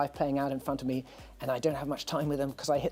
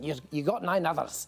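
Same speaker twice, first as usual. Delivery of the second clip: put-on imitated Scottish accent; 2 semitones higher than usual. Retelling his guitar technician's reply about a broken finger, in a scottish accent. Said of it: "in a Scottish accent".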